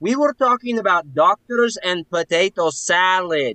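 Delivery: high, loud, flustered shouting. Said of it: "You don't have to shout in my face".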